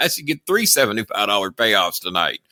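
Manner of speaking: usual speaking voice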